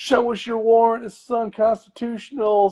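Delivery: put-on, very high, shrill, protesting shriek. Mocking street bystanders who confront ICE arrests, imitating people screaming. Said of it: "random people and neighbors on the street like screaming like".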